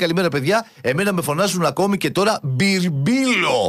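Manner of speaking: normal talking voice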